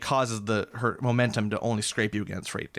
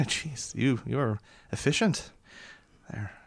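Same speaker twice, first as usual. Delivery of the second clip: chuckling quietly. Voicing a character who is impressed by another's work: chuckling to herself. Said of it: "she kinda chuckles to herself".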